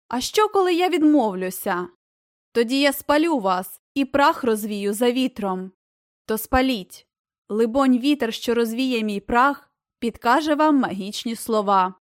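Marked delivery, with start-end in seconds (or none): none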